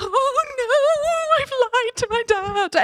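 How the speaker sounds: very high, slow, tearful sob, words stretched. Retelling getting off the phone after lying to their dad, imitating own crying. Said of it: "I'm crying".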